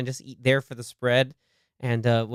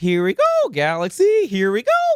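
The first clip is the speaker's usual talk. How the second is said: very high squeaky cheer, swooping in odd patterns; 10 semitones higher, 5 dB louder than usual. Imitating him cheering at a galaxy game, imitating a squeaky voice. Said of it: "his voice squeaks in awk- in like strange patterns".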